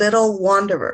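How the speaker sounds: usual speaking voice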